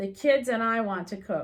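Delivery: ordinary delivery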